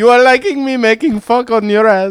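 put-on Indian accent. Justin keeps up a joke bit while the other speaker objects; mock indian accent. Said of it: "You don't have to do the accent".

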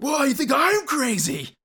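very high, slow mock crazy character yell.

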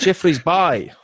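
put-on loud, high South African accent, Bay sounding like bye. Acting out the man you're trying to get to say the surf spot, in a South African accent. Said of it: "in a South African accent".

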